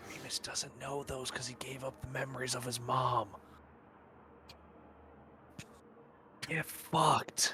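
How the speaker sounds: whispered voice. Whispering a jab into a wall: whispering. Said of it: "Who are you whispering to?".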